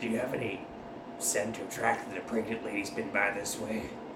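low, gruff, growling voice.

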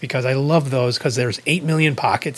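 usual speaking voice

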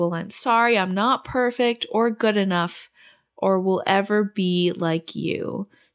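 ordinary delivery

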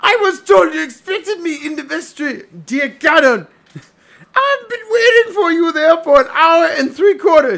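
playful, high-pitched put-on professor voice. Playing the professor, speak to another character in the fun high professor voice. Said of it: "the really fun high voice professor".

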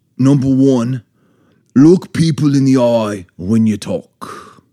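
Scottish-accented voice. Listing a first rule on request in a comedy bit, Scottish accent. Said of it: "I'll do Scottish like this".

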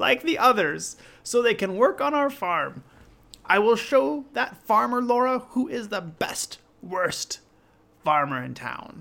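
very high, very loud, shrill wicked hag voice. Reading a story aloud, voicing the witch in a witch voice. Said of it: "I love your witch's voice".

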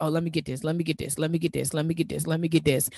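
hurried, scrambling, frantic, rattled-off repetition. Retelling own past scramble to replace income: imitating own frantic self. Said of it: "in a frantic".

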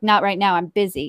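ordinary delivery

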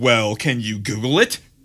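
testy, put-out, snippy, annoyed tone. Retelling asking a phone assistant to search: imitating own annoyed voice. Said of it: "in this voice".

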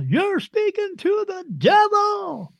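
very high, swooping, slow, drawn-out accusing shriek. Retelling a woman's accusation at a mall reading: imitating a woman screaming. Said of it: "she screamed out in the mall".

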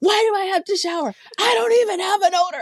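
argumentative yelling, very high-pitched. Retelling an argument with a daughter about showering: imitating daughter yelling. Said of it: "She's yelling at me".

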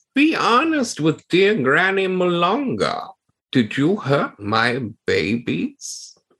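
drawn-out, high, slow delivery. Voicing Granny Malonga questioning the two intruders: Granny Malonga voice. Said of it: "She says".

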